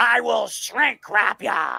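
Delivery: rough, creaky, slow, drawn-out drawl. Showing Speedy the voice to use for the line, in a Vince McMahon voice. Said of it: "the Vince McMahon voice".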